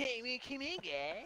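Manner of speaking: acted cartoonish voice. Right after being asked why he sounds like Cartman, Cartman voice. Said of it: "he can do some mean Cartman voices".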